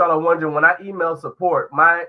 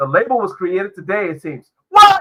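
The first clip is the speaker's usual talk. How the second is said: ordinary delivery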